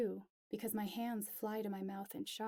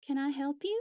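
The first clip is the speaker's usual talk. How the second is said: sweet, high drawl, very loud; 5 semitones higher, 8 dB louder than usual. Reading a story aloud, a woman at the door greets strangers: soft, sweet, drawly voice. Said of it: "her voice soft, sweet, and drawly".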